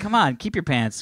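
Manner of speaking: ordinary talk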